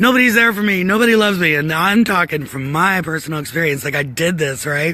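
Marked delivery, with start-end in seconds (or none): 0.0-1.5 mock angry yelling, loud and high. Acting out someone mad at being unloved: acting out an angry yell. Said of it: "you're mad and you're yelling like".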